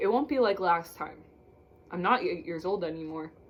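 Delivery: plain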